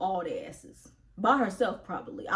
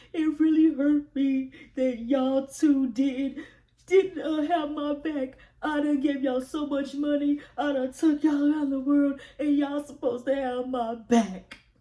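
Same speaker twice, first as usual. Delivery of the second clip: high, loud crying, a sob in every line; 7 semitones higher, 5 dB louder than usual. Retelling a tearful complaint about loyalty: imitating Jocelyn crying. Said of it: "Jocelyn's still crying, talking about some".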